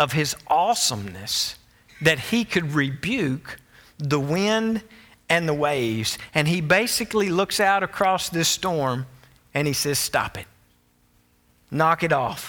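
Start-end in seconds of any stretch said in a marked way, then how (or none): 10.0-12.5 acted stern, commanding voice. Retelling how Jesus calmed the storm, imitating Jesus rebuking the wind. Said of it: "He rebuked it".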